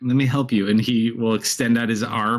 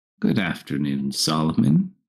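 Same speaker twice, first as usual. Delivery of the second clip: very deep, low, swooping, alien-sounding voice; 7 semitones lower than usual. Voicing a figure who speaks to a player: strange voice not his own. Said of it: "this strange voice speak out that's not his".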